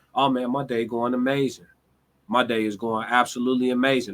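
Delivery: calm, level, flat, laid-back, mellow, unexcited delivery. Acting out a phone chat, telling exciting news in a flat, calm, mellow tone. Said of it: "I'll tell you something super exciting in a mellow ass tone".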